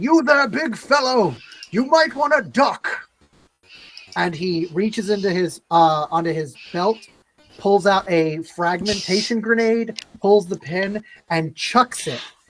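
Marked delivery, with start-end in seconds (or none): 0.0-2.9 put-on, high, called-out yelling. Voicing a character warning a big fellow before a grenade: yelling in character. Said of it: "he yells out".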